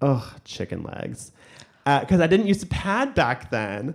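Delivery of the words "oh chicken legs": quiet under-breath mutter, slower. Recalling walking on stage, retelling someone's remark under her breath. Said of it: "You can hear under her breath".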